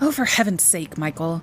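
plain reading voice

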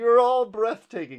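very high, loud, screamed shout. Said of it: "He screams back at him".

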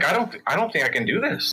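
ordinary talk

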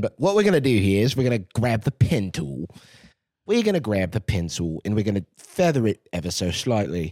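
put-on accent wavering between English and Australian. Narrating an editing tutorial in a voice for a guy, put-on English-Australian accent. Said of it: "I keep jumping between English and Australian".

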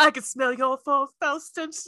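put-on British accent. Discussing a Star Wars scene, quoting Leia: Leia's British accent. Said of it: "British accent".

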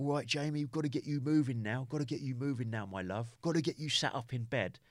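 put-on Essex-accented voice. Retelling what a nurse said on waking in hospital: imitating a nurse's Essex accent. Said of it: "a nurse distinctly with a sort of an Essex accent".

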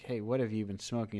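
normal talking voice

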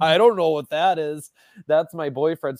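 mock tearful talking, high, as if crying. Retelling how a woman answered a cop's question, imitating her crying. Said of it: "As she's like crying".

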